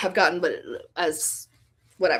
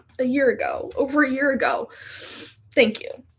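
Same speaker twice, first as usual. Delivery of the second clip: teary, pitched up, close to crying; 6 semitones higher than usual. Thanking someone who remembered something from over a year ago, tearful. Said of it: "didn't expect to cry today".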